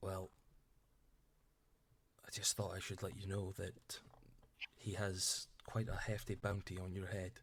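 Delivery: speaking in a whisper. In a role-play, a character speaks privately to a former colleague, whispering. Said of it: "He whispers to you".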